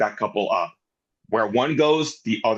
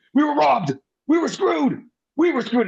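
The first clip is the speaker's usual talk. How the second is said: shrill, repeated high-pitched yelling. Recounting a funny segment where he sits in the corner, imitating Tommaso Ciampa yelling. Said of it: "he's just yelling".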